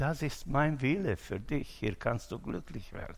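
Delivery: soft, gentle, soothing voice. Speaker quoting what god says to a person, in a gentle voice. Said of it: "er redet mit sanfter Stimme und sagt".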